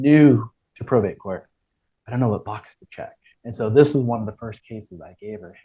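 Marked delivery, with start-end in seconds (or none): 0.0-3.2 hushed whispering. Retelling what the new judge said at the bench: imitating the judge whispering. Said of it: "she was whispering".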